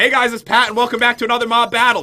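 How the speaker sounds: mocking, teasing, poking-fun delivery. Retelling how mom teases by repeating the intro, imitating mom mocking. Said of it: "she would make fun of me".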